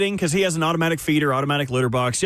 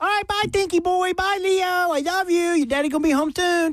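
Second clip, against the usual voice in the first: put-on baby talk, higher pitch; 13 semitones higher than usual. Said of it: "Everyone does the baby talk".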